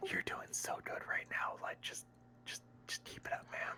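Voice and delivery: soft, unvoiced ASMR whisper, close and intimate. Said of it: "my very best A S M R voice".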